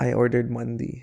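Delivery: whispered voice. Recounting hugging her right after she said yes, retelling a whisper. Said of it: "and I whisper to her".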